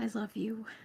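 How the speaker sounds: quiet whisper. Speaking in character to a cat that no one else sees: whispering to a cat. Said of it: "I just whisper to the cat".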